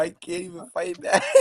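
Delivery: speech broken up by laughter. Reacting to another speaker's rant about the team: laughing while talking. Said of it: "I've been laughing the whole time".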